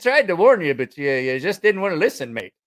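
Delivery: poor, fake British accent. Speaker retelling what a man told him afterwards, in a bad British accent. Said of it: "I just can't do a British accent".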